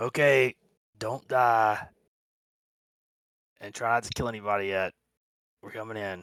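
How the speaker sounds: quiet, hushed whisper. Narrating a game scene, the rock looks around and whispers back. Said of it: "whispers back".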